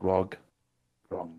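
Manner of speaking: hushed, soft half-whisper. Leaning in close to give a name in character: half-whispering. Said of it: "I'm gonna whisper".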